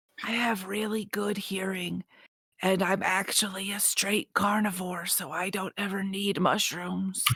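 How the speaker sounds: whispered character voice. Voicing Winston's reply in the story, Winston whispering back. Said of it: "Winston whispers back".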